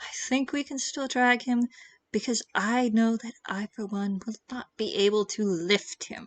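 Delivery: very quiet, hushed murmur under the breath. Rhodey, peeking in at a loudly snoring man, suggests dragging him, speaking very quietly. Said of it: "And says very quietly".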